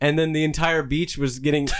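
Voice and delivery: ordinary talk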